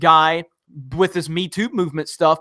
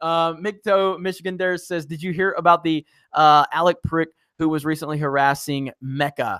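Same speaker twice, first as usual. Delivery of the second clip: ordinary talk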